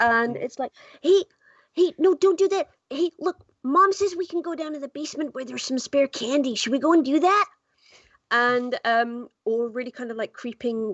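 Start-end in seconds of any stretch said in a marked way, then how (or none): 1.0-7.5 put-on quick, high, chattering American child voice. Showing the kid voices they do, American kid voice. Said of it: "I do a lot of the kid voices".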